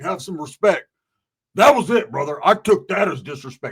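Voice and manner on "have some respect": plain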